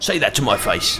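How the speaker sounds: put-on British accent. Retelling a game character's line in a British accent. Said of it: "a British dude's like".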